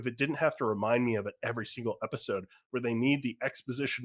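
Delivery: ordinary talk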